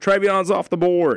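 play-acted very loud, high-pitched shouted call. Retelling a shout right before the half: imitating Robbie yelling loudly. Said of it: "yells it real loud".

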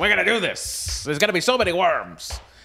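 pitched way up, grand. Imitating Maurice Hurley planning to bring the worms back: Maurice Hurley impression. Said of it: "that's my Maurice Hurley impression".

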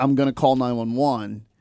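ordinary talk, nothing marked

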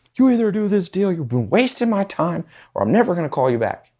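shrill, very high, fed-up, frustrated yelling. Retelling someone yelling at a man stalling a deal: imitating Justin yelling. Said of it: "Justin just yelling at this guy going".

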